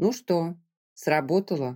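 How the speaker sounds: plain reading voice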